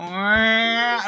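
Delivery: put-on high, drawn-out crying wail like a siren. Retelling a younger brother starting to cry: imitating a child wailing. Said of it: "he'd start going".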